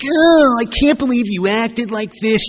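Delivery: whiny, high-pitched, self-pitying little victim voice. Retelling playing the victim after getting home: put-on whiny, victim-y voice. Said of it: "my little victim-y, whiny voice".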